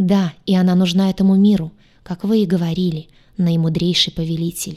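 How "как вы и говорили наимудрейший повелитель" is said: ordinary delivery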